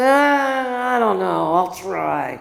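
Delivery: imitated drunk woman's voice. Retelling a drunk passenger's reply on a flight: imitating a drunk woman. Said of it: "She was really drunk".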